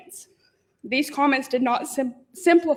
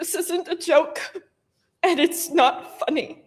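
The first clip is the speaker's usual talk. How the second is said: tearful, crying voice; 3 semitones higher than usual. Citizen at a public meeting recounting saving a friend, crying. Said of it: "I'm sorry for crying".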